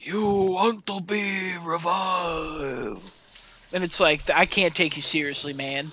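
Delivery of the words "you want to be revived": very slow, drawn-out ancient mummy voice. Retelling a funny figure's line, the speaker talks like an old ancient mummy. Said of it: "talks like an old ancient mummy".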